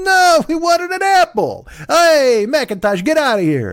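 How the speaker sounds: very high put-on Irish accent sliding into Italian. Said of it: "why the Irish became Italians".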